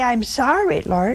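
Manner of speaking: normal talking voice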